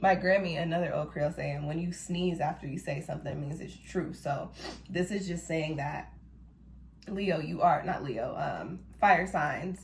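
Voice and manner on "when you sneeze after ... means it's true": plain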